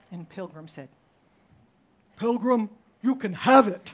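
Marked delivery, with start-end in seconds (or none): 2.1-3.9 put-on, very loud, booming voice from on high. Retelling how a child answered for God: imitating God's voice. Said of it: "He changed his voice for God's voice".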